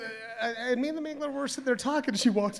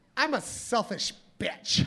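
mock loud, ditzy, dumb-sounding woman voice. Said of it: "she sounded really dumb".

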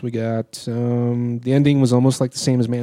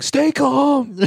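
put-on very high, shrill, terrified yell. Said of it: "In like the most frightened voice".

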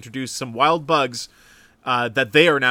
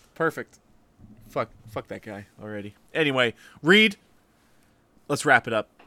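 ordinary talk

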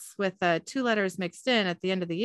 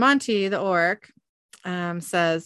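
ordinary talk

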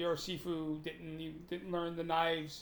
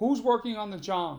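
booming, loud, high bellow; 5 semitones higher, 7 dB louder than usual. Retelling how the teacher called out from his office: imitating a bellow. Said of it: "he bellowed out".

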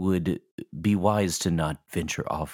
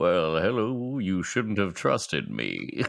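put-on giant monster creature voice. A player imagines the giant space spider they will fight, giant space spider voice. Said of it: "that has this voice".

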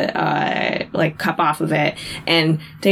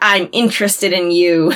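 plain

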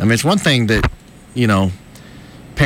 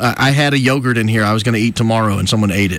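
ordinary talk, nothing marked

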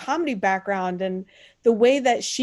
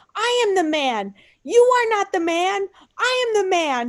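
mock childish, high, slow tantrum screaming; 9 semitones higher than usual. Retelling a movie scene where a man screams at a woman, imitating a man screaming. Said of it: "he starts screaming at her".

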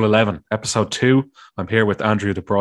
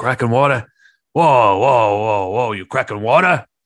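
put-on New York accent, slower. Recalling a friend's rant, the speaker repeats it in a New York accent. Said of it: "I went into a New York accent".

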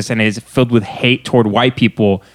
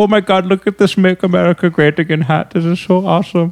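delighted put-on German-accented English, pitched up; 7 semitones higher than usual. Retelling what a German guy in a shop said: imitating a German guy's accent. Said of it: "I saw a fucking German guy in New York".

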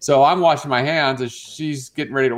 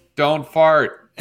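normal talking voice

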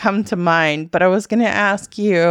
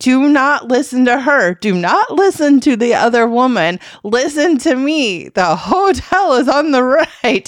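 put-on, insistent, urgent, yelled screaming; 4 semitones higher, 4 dB louder than usual. Retelling a car ride, arguing with the driver over GPS directions: imitating own past screaming. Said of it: "And I kept screaming".

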